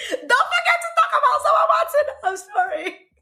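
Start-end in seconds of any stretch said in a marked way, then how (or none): 0.1-2.1 mock shrill, very high yell from the background. Retelling what B B yelled from the background: imitating someone yelling. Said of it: "B B is yelling at me in the background".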